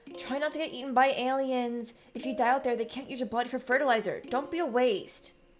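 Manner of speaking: calling out loud. Narrator reads Mars calling out so Diz can hear: raised voice to be heard. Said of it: "raises her voice so Diz can hear".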